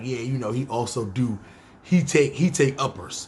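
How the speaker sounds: ordinary delivery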